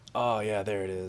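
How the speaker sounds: put-on super quiet voice. Teasing another player by imitating them: imitating someone super silent. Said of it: "super silent".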